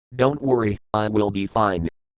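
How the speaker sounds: ordinary delivery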